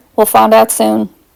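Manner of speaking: plain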